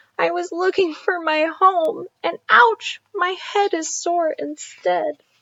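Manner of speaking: small, high-pitched voice. Narrating a story, the crying little turtle speaks in a tiny voice. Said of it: "with his tiny voice he said".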